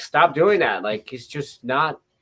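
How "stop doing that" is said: mock exasperated, frustrated yelling scream. Recalling watching the game, retelling screaming at the tv. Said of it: "I was screaming at the TV".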